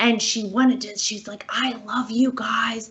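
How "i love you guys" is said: higher-pitched put-on whisper. Retelling what a woman at CVS said: imitating someone whispering. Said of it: "she was, like, whispering".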